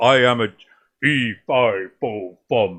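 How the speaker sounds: very slow, deep, booming, big man rumble. Speaker imitates a huge guy from the movie, imitating a huge guy's deep voice. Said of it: "but that guy's got that, like".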